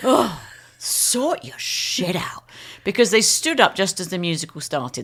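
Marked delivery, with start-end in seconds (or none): 0.0-2.4 put-on, thoroughly fed-up, very slow, drawn-out tone. Retelling what Joe said to people standing up at a concert: imitating Joe's exasperated tone. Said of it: "In a very exasperated tone".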